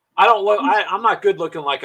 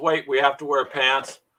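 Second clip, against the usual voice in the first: usual speaking voice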